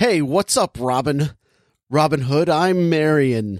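put-on American accent. Imitating an actress who drops her accent in a movie: Eve Hewson's American accent. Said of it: "she's just an American for the rest of the movie".

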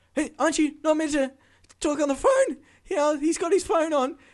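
very high, very loud, shrill, scared, panicked blurt. Retelling a passenger's outburst after landing: imitating a loud, scared passenger. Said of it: "she didn't realize how loud all of a sudden she was speaking".

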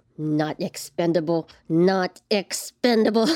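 slow, drawn-out, repeated mumbling to oneself. In a game, the player voices Mercus gazing into the distance: mumbling. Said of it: "and just mumbling".

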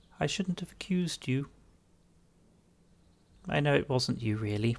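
tiny, small fairy-creature voice. Voicing a fairy character in the scene: soft little fairy voice. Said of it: "a very soft little fairy voice is going to go".

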